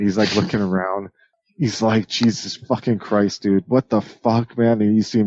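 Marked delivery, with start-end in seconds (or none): 2.1-4.8 tripped-out, dazed, disoriented, lost bewilderment. Voicing a dazed character waking in a garage: dazed and disoriented. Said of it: "he's just kinda, like, tripped out".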